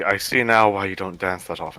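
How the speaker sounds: very quiet, low-key, said under the breath. Voicing a character speaking to his dance partner: said very quietly. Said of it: "Just very quietly, he's gonna say".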